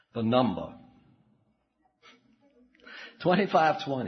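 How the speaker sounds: put-on Western Kentucky accent. For a bit of comic relief, the speaker reads a number in a Western Kentucky accent. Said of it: "In my very best Western Kentucky".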